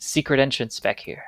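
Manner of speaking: soft, hushed, breathy whisper. A narrator voices a character whispering back, in a whisper. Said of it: "he whispers back".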